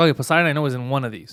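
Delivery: normal talking voice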